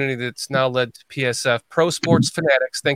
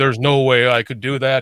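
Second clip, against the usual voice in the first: mock, big, booming, carrying voice; 4 dB louder than usual. Speaker retelling Dan's reply when they talked, Dan's booming voice. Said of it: "Dan in his booming voice".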